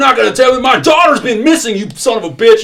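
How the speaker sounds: shrill, furious yelling at full volume. Retelling a father's reaction when told to calm down about his missing daughter, retelling an irate shout. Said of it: "the man is just irate".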